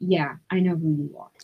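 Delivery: charged, tense, loaded, tension-filled tone. Retelling how a doctor answered on the phone: imitating a tense reply. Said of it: "He said in a tone that I will never forget".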